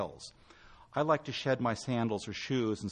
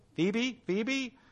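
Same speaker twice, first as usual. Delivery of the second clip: mock calling out, shrill, pitched very high; 12 semitones higher than usual. A father calls his daughter's name into the phone; yelling. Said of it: "stop yelling".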